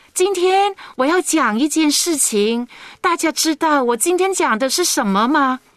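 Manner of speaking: put-on high, storytelling kids' show host voice. Showing how children's programs talk, in children's-show storytelling tone. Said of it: "这个是小孩子儿童节目的做法".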